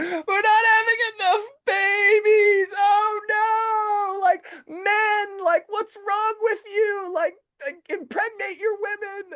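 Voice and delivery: very high, loud, drawn-out, play-acted whiny crying. Retelling what someone online says about the birth rate: imitating someone whining. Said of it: "crying about the birth rate".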